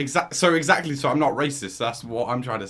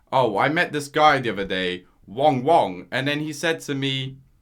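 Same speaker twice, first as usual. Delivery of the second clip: ordinary talk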